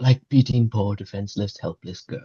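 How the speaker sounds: whispered, in a character voice. Leaning down in character to speak into the stable master's ear: whispering in character. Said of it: "just whisper in his ear".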